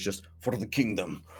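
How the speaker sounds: very quiet, very deep, gravelly voice. Telling the scene, the speaker voices a figure with a longsword: very deep gravelly voice. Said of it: "you hear in a very deep and gravelly, gravelly voice".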